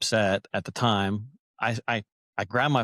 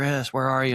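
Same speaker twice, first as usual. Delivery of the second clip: imitated yelling; 3 semitones higher than usual. Retelling how a friend searching for the speaker yelled: imitating a friend yelling. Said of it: "my buddy yells for me".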